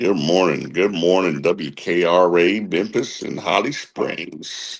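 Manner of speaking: on-air radio station host announcer delivery. Greeting listeners of WKRA, Memphis and Holly Springs, in a radio voice. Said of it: "got that radio voice".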